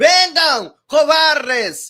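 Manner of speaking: frantic, high, loud, desperate yell in Spanish. Picturing a B-2 arriving and Maduro reacting, in a Maduro impression. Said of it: "Eles não têm o V, eles não falam o V".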